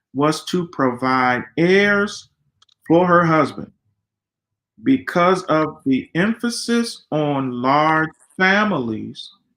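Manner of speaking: slow, careful, deliberate reading aloud.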